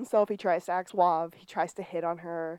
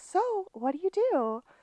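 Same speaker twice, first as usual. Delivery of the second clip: put-on very high, slow little girl voice; 12 semitones higher than usual. Retelling how someone asked himself questions, quoting him in a little girl voice. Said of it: "in his little girl voice".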